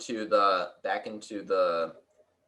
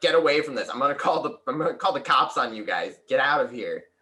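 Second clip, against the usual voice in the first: heated, high-pitched, angry yell; 5 semitones higher, 3 dB louder than usual. Voicing a man who is yelling at you guys: yelling. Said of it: "He just he's yelling at you guys like".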